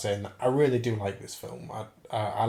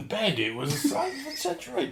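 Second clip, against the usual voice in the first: put-on gruff cockney voice, higher; 11 semitones higher than usual. Doing one actor imitating another actor's famous line. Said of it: "I can do Ray Winston do a Michael Caine".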